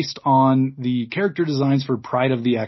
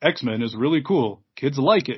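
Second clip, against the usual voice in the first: mock clueless, out-of-touch grown-up commercial voiceover. Speaker imitates a 50-year-old man's voiceover in an X-Men commercial: clueless adult announcer voice. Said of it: "in that adult voice where they don't really know what they're talking about".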